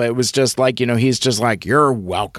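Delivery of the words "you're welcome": understated, held-back delivery in low, unprojected voice. Retelling how someone answered a thank-you: imitating a lower voice. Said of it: "it was in a lower voice".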